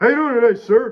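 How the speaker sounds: very loud, very high-pitched shouting. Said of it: "Why you fucking yelling at me".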